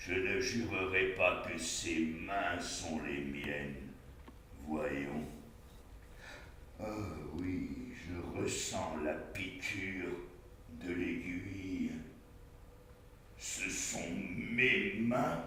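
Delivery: very low, very quiet murmur, half-mad king voice. In a stage play, the fallen king Lear speaks; Lear, half-mad fallen king. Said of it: "notre roi déchu, / notre roi déchu, [name]. Au langage libre comme l'air. Il est une part de fou, mais chez lui pourtant la lucidité peut prendre le dessus d'un instant à l'autre. / notre roi déchu, /".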